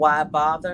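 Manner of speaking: plain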